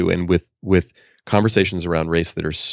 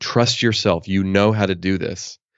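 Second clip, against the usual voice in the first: put-on stern voice. Retelling a midwife's words to a woman in labor: imitating a stern midwife. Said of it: "just said to her very sternly".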